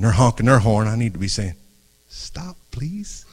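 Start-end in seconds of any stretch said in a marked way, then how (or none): 2.1-3.2 facetious, mock-polite pleading, high and soft. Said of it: "I'm being facetious".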